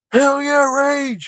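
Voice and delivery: put-on high, rowdy, drunken hollering yell. Speaker recalls his drunk self in a Wu-Tang concert mosh pit; retelling a drunken scream. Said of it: "is screaming like".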